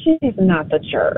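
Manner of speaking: hushed, soft, quiet, low-key delivery. A caller gives the tiebreaking verdict, soft. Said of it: "Why you say it so soft?".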